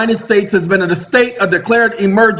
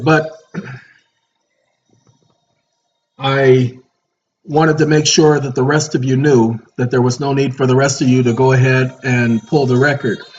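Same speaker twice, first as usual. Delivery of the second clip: tired-sounding voice, lower; 7 semitones lower than usual. Thanking viewers and explaining the record, exhausted voice. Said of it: "if you can't hear it in my voice, I am exhausted".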